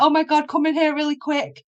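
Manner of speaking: mock crying, high, tearful screaming voice. Retelling calling her mother after feeling a presence: imitating own crying scream. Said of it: "crying, like, screaming".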